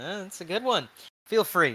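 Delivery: talking through a chuckle. Answering someone who asks to sit down; chuckling while speaking. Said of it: "he kind of chuckles and goes".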